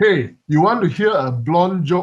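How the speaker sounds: play-acted loud, attention-grabbing calling out. Telling a joke, a blind man calls to the bartender: imitating a yell. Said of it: "yells to the bartender".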